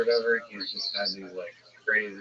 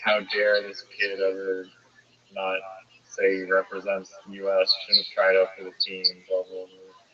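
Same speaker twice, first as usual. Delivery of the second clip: ordinary talk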